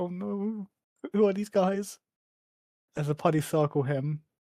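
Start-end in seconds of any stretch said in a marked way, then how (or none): 0.0-2.0 put-on frightened small boy's voice. Retelling a scene where a kid on a bike is circled: imitating a scared kid. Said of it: "he's so scared".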